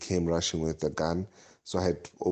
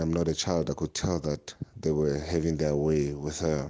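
ordinary talk

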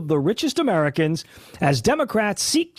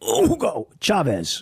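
choked, strangled voice as if choking; 3 semitones lower than usual. Ranting about seizing people's wealth, saying the name as if choking: choking on 'Hugo Chavez'. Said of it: "I say it like I'm choking".

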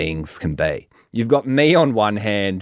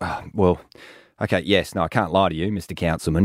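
normal talking voice

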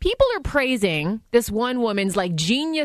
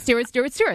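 ordinary delivery

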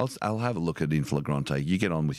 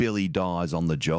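ordinary talk

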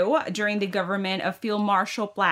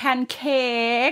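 Thai-accented English, higher-pitched; 4 semitones higher than usual. Explaining how English words sound in a Thai accent, saying one in a Thai accent. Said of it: "say it in like a Thai accent".

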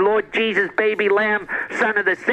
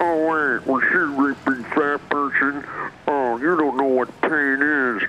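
creepy put-on killer voice, lower; 7 semitones lower than usual. Doing an impression of Buffalo Bill from Silence of the Lambs: Buffalo Bill impression. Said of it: "you're doing impressions of Buffalo Bill".

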